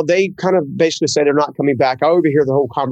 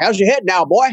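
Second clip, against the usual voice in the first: put-on folksy North Carolina Southern accent, pitched higher; 5 semitones higher than usual. Retelling going to talk to Steve as he rolls down his window: imitating Steve's Southern accent. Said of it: "I'm a good old Southern guy from North Carolina".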